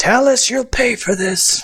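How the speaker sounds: high, shrieking scream. Voicing a character who rolled a crit fail: screaming a threat. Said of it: "and he screams out".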